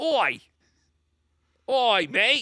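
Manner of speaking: bad Australian accent. Podcaster tries an accent they say they can't do, bad Australian accent. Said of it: "I can't do a uh, Australian accent or a New Zealand accent".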